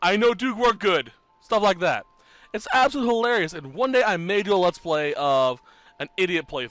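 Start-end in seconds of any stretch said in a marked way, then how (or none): 0.0-1.1 dumb caveman voice, louder. Showing how a low-intelligence game character talks, in a dumb caveman voice. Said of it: "You speak like a caveman".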